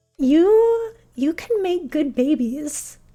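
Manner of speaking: put-on heavy, thick non-American foreign accent. Retelling what a dance teacher said while measuring, imitating a thick accent. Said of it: "in her, like, thick accent".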